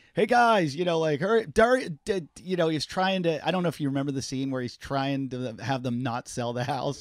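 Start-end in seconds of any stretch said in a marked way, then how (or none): 0.1-1.8 mock loud, high-pitched yelling. Retelling an improvised movie scene, imitating Will Ferrell yelling. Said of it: "yelling across the yard".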